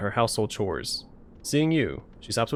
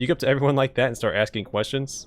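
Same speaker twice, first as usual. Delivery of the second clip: ordinary talk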